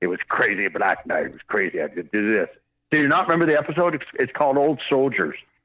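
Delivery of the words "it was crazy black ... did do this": deep, low hard-boiled noir detective narrator voice. Retelling an episode with a Humphrey Bogart thing: Wolverine voice doing Humphrey Bogart narration. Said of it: "but it's in Wolverine's voice".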